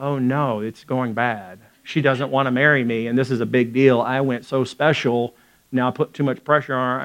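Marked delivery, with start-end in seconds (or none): none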